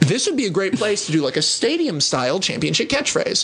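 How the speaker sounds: ordinary talk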